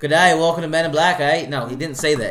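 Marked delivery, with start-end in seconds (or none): 0.0-1.2 put-on loud, high, belted-out Australian accent. Joking about how a trailer line would sound: Chris Hemsworth Australian accent. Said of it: "If Chris Hemsworth had an Australian accent".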